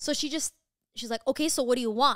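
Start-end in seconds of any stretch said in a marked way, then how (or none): 1.3-2.2 put-on judging, judgmental old lady voice. Retelling how the old lady at the desk spoke: imitating a judging old lady. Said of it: "Literally like that".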